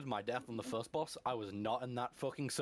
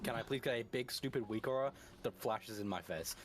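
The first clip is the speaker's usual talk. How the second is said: plain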